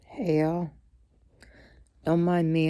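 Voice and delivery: voice catching with emotion. Greeting viewers at the start of a video, choked up. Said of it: "I'm just getting a little bit choked up".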